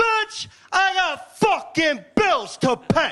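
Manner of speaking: slow, high, drawn-out stand-up comic bravado. Doing a stand-up bit in Andrew Dice Clay style. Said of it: "Fucking Andrew Dice Clay over here".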